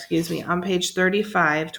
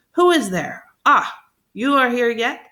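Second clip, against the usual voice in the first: loud, high, terrible, dreadful outcry; 6 semitones higher, 5 dB louder than usual. Narrator reading Jean Valjean exclaiming at the boy, in a terrible voice. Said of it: "exclaimed in a terrible voice".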